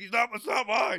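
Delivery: very high, shrill, flimsy, bad monster impersonation. Acting out a cookie addict caught in a cell check: Cookie Monster voice. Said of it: "Not one of your better impersonations".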